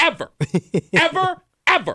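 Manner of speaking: mock, very high, livid, furious repetitive harping. Recounting an overheard couple's argument, imitating a livid woman. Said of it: "Because she kept saying ever".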